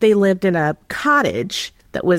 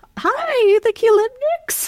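put-on mixed Irish and Romanian accent. Retelling how the man who opened the front door greeted them: put-on irish romanian accent. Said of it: "his like Irish Romanian accent".

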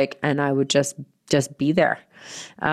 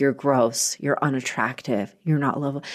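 imitated sad inner voice; 3 dB quieter than usual. Retelling what the voice inside said: imitating a sad inner voice. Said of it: "it was just this such sad voice".

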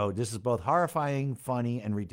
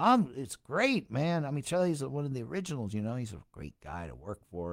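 play-acted, charming, schmoozing patter; 4 dB quieter than usual. Retelling his own answer to a shy guitar player: imitating himself turning on the charm. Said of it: "I turn it on".

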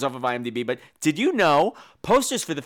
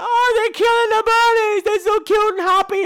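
very high, loud, upset and dismayed distressed cry; 6 dB louder than usual. Retelling his own reaction while watching the film: imitating his own past upset. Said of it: "I'm watching and going".

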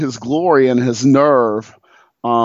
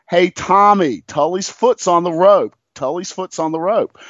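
repeated, pitched-up, imitated yell; 5 semitones higher than usual. Retelling how the front row warned the referee: imitating a yell. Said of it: "we started yelling".

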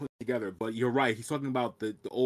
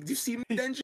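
mock, very high-pitched, shrill yell; 12 semitones higher, 3 dB quieter than usual. Retelling an anime scene as the doors close: imitating Power yelling. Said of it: "and she's yelling".

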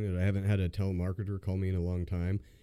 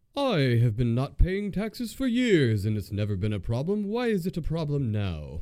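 loud, swooping, clearly put-on British accent; 7 semitones higher, 6 dB louder than usual. Retelling how a guy messed with a robotic caller, put-on British accent. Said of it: "he put on a British accent".

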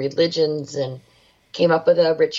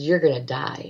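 put-on demonic, demon-like voice. Retelling what a ghost box said before a ritual, in a demonic voice. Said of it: "this demonic voice comes out and says".

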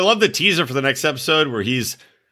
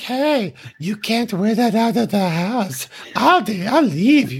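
put-on creepy baby voice, higher pitch; 5 semitones higher than usual. Imitating a cast member telling his girlfriend what to wear: imitating Muhammad's creepy baby voice. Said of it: "having a voice like this".

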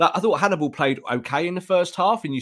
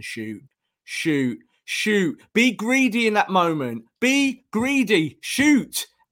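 mock, drawn-out, high shouting, climbing as it goes; 7 semitones higher than usual. Retelling a match moment, imitating own shout at the television. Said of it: "I'm just shouting at the television".

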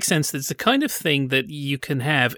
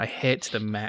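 ordinary delivery

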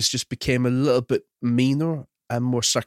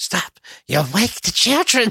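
high, swooping cartoon mom voice, pitch swinging wide; 9 semitones higher, 3 dB louder than usual. Asked to do a Marge, the speaker performs a line to Homer: Marge impression. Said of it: "Do a Marge".

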